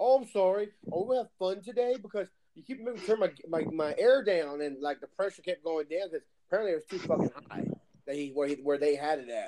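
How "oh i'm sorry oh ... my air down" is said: normal talking voice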